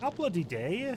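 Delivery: slipped into high, put-on northern English accent. Accusing someone of lying, in a put-on northern english accent. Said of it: "I don't know why I've gone all northern".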